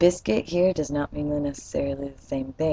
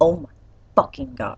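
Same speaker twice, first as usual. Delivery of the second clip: stunned, shocked outburst. Showing how "oh my god" is really said: shocked exclamation. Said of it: ""Oh my god" is usually a shock expression".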